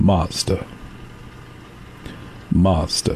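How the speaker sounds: deep, breathy, hushed radio announcer voice. Saying a drink makes the voice deeper, the speaker shows off a national radio spot voice. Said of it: "This is my national radio spot voice".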